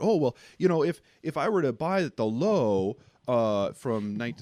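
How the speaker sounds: mock voice, heavily sarcastic, dripping with sarcasm. Imitating what people might ask about buying at the low: imitating people sarcastically. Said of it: "sorry about the sarcasm".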